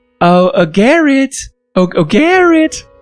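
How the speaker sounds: put-on girl's voice. Calling out to garrett in character in a game: put-on girl's voice. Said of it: "doing a girl's voice".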